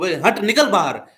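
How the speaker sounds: stern, harsh scolding tone. Shooing a dog out through the open door, harsh scolding tone. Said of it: "ऐसे अगर आप डांट के बोलो".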